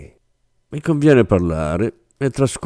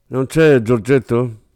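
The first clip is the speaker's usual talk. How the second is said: arrogant, haughty, lofty, superior tone; 4 semitones higher than usual. Narrator reads Rossini questioning the clerk at the counter, arrogant tone. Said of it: "domandò Rossini in tono arrogante".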